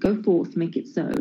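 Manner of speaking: ordinary talk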